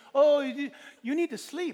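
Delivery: English spoken with a put-on Hebrew accent. Quoting what a woman said to you, in a Hebrew accent speaking English. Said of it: "in their Hebrew accent speaking English to me".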